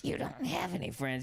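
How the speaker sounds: rough, creaky creature voice. Retelling a mother on speakerphone talking to her son: Gollum voice. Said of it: "like fucking Gollum on Lord of the Rings".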